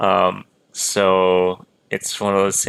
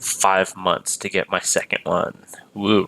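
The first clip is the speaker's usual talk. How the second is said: normal talking voice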